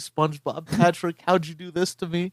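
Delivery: frantic, panicking, freaking-out cry. Retelling a cartoon scene about a felled tree: Squidward freaking out. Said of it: "Squidward, like, freaking out".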